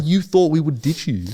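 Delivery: really mad, high retort. Retelling a friend's reaction to the speaker's worry about being ditched, imitating a furious friend. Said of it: "He was furious".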